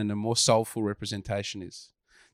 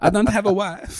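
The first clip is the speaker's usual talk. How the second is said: put-on over-the-top Eastern European accent, very high; 11 semitones higher, 6 dB louder than usual. Recounting how they all did it, Borat accent. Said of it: "They all did Borat accents".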